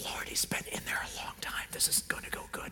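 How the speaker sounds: very quiet, soft, sidelong whisper. Retelling Martha's words to Jesus at the tomb: imitating Martha whispering. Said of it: "sidles over to him and whispers".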